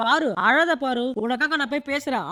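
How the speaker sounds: ordinary talk, nothing marked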